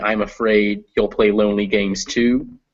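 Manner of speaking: plain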